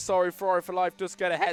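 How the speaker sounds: voice cracking mid-line on sorry. Commentating a car race as one driver gets ahead, the speaker's voice cracks. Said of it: "voice crack".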